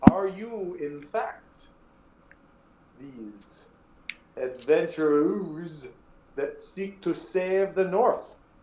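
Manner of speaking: put-on thick, over-the-top French accent. Voicing Clavius, a bard, greeting adventurers: ridiculously heavy French accent. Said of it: "that ridiculously heavy French accent".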